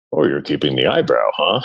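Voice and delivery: very low, fatherly dad voice. Retelling his dad's reply to a photo he sent, imitating his dad's voice. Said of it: "That's a great dad voice".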